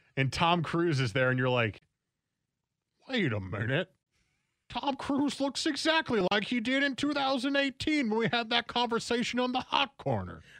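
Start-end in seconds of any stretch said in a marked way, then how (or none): 3.1-10.3 put-on very high, swooping elderly codger voice. Imagining being on a deathbed watching a new movie on tv: old man voice. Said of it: "I like your old man voice".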